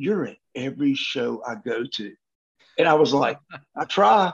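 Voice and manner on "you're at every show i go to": softened, quiet, hushed delivery. Retelling what a man said to him after looking at him, imitating someone going quiet. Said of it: "he gets real quiet".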